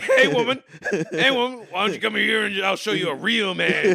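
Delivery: put-on movie character voice, calling out. Joking about a girlfriend's body part talking: Clubber Lang voice. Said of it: "you named your dick Clubber Lang".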